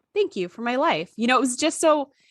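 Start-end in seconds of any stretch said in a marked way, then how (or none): 0.1-1.1 put-on innocent childlike delivery. Retelling a character's dying line: imitating an innocent childlike delivery. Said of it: "the way she said it was just like".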